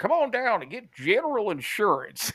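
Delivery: high, swooping cartoon character voice. Imitating a TV insurance commercial: General Insurance cartoon voice. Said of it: "this fucking cartoon voice".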